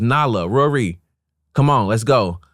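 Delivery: easy, mild calling-out voice. Retelling calling the girls to come back in: retelling own yell. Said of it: "I'm yelling at my girls".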